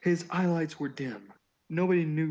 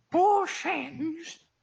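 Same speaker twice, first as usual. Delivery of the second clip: put-on old man voice, much higher, louder; 13 semitones higher, 3 dB louder than usual. Comparing a character to Master Roshi from Dragon Ball, the speaker does a Master Roshi voice. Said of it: "He's like Master Roshi ... where he's just like".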